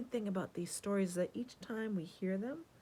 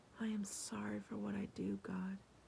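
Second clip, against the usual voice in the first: quiet, soft whisper, barely audible; 5 dB quieter than usual. Telling the parable, the tax collector prays so only God hears; whispering. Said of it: "he whispered".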